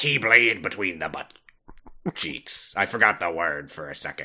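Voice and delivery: put-on, swashbuckling pirate voice. Podcast hosts joking about Keyblades, one slipping into a pirate voice. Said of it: "it's a pirate voice now".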